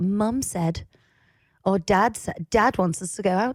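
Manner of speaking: put-on posh accent. Showing how people talk about what their parents said, in a posh accent. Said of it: "why did that accent again?".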